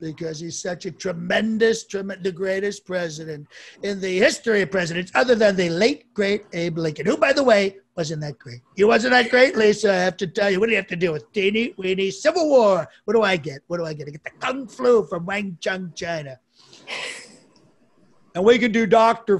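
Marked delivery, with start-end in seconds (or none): 1.8-16.4 loud, fast, rattled-off rambling rant. Speaker doing a run of impressions, starting with a Trump impression. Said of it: "I'll do Trump first".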